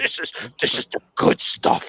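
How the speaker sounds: breathy murmur, almost whispered. Retelling what someone texted during a wrestling match: Vince McMahon voice. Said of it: "He sounded like Vince McMahon".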